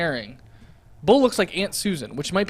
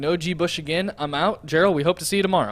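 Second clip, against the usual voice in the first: ordinary talk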